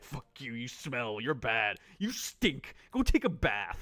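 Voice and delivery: put-on blunt, petty, rude and dismissive tone. Retelling how a rude character answered a friendly offer: imitating a rude character. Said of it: "and he's just like".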